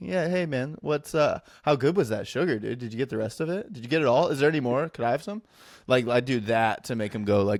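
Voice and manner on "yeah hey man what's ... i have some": play-acted casual tone, sly, passive-aggressive, with an edge. Acting out what they'd say to a fellow player: passive-aggressive. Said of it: "a little more passive aggressive".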